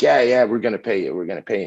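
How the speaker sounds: put-on excited voice. Retelling a father's reply about getting paid: imitating an excited father. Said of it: "he's all excited".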